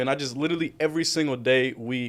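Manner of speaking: ordinary delivery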